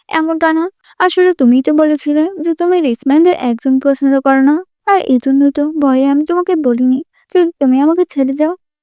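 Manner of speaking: ordinary delivery, nothing marked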